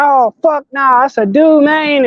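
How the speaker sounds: put-on thick Southern country accent, slow and high-pitched. Quoting a guy who sounds like he's from the South, in a heavy country accent. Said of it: "Like hella country accent".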